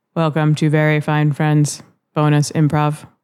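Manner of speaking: little robotic voice, flat monotone, no affect. Opening the show again, a host tries the welcome; robotic voice. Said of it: "There's a little robot".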